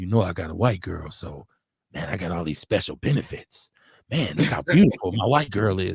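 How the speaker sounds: secretive, hushed, confiding half-whisper. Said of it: "wanna whisper to me".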